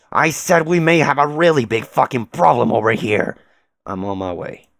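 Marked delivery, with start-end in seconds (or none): 0.1-3.3 shouting, higher and louder. A foam puppet repeats his warning after being told to speak up, shouting. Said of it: "Louder, man".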